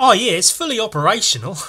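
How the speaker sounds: put-on faint touch of Australian accent. Quoting the guy who made the reverse bear trap, in a slight Australian accent. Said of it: "did I vaguely use an Australian accent for a second?".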